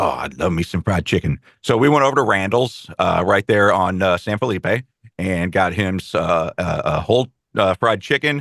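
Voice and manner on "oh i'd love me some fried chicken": put-on low, older gentleman-style old man voice.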